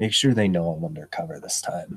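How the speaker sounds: soft, hushed, under-the-breath half-whisper. The narrator voices a character half-whispering to another man: half-whispering. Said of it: "he's going to whisper to the dude".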